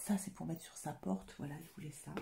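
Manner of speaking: soft, quiet, hushed voice. Showing a gift for the family with the speaker's little boy right nearby: speaking softly. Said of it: "je parle tout bas".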